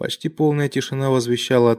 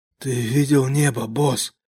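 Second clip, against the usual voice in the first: speaking through wheezy coughing. Narrator reads a man speaking to his boss, wheezing through a cough. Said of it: "сквозь свистящий кашель проговорил".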